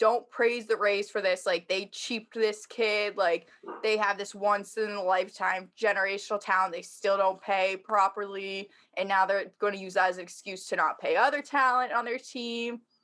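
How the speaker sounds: plain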